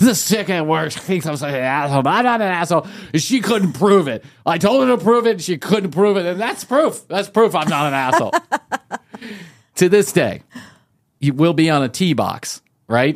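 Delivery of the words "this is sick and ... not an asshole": put-on, hammered, sloppy, fast drunk slurring. Speaker retelling a drunk man's story, imitating drunk slurring. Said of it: "drunk, just hammered, just slurring all over the place".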